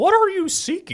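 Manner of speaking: tiny, very high cartoon voice. Reading a Bible passage aloud in turns, voicing a man: VeggieTales voice. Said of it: "Veggie Tales over here".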